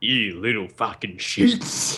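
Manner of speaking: put-on voice of a furious, angry man. Retelling a crank call where the man on the phone snapped: imitating a furious man. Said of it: "He went real nuts".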